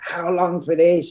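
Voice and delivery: loud, drawn-out screaming. Retelling a head chef screaming at staff: imitating a screaming head chef. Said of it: "here screaming at me".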